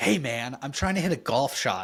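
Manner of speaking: mock-upset, acted-out upset voice. Retell a video of a golfer complaining while trying to hit a shot, imitating an upset golfer. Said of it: "you just can't sound that upset".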